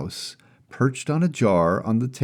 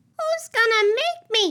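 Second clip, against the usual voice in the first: very high, squeaky mouse squeal. Narrator reading a mouse's reply to the cookie-guarding narrator, squealing mouse voice. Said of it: "squealed the mouse".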